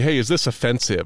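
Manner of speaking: ordinary talk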